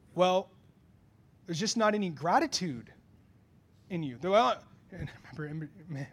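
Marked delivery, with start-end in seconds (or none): none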